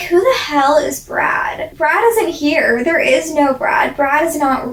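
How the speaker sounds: normal talking voice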